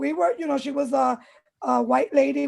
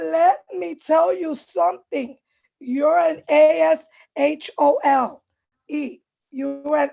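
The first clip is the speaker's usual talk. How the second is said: mock woman's yelling at a much slower pace; 2 semitones higher, 4 dB louder than usual. Retelling a lady pointing at his nephew, imitating a lady yelling. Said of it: "and she's yelling all this".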